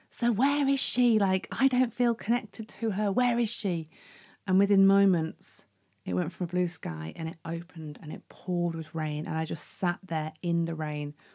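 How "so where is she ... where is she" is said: put-on, high, furious, raging, demanding yell. Retelling screaming at a little bird by the lake: retelling own scream. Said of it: "I screamed at this little bird".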